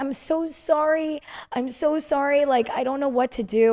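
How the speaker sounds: mock very slow, high-pitched, weepy, tearful voice. Recalling apologizing to an angry parent while overwhelmed at an event, you act it out, imitating your own crying. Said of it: "They're yelling at me".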